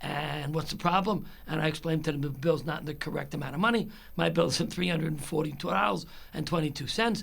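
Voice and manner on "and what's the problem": ordinary talk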